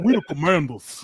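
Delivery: muffled, full-mouthed mumble. Repeating a Doug Williams quote as if mouth full of mashed potatoes. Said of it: "you gotta say it like you got mashed potatoes".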